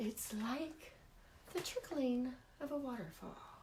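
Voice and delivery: very soft, slow, hushed soothing murmur. Imitating how he described car soundscapes: imitating a soothing voice. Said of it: "In a soothing voice".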